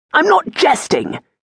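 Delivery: very high, sharp, curt snapping. The Baron answers his friend's remark, snapped. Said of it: "the Baron snapped".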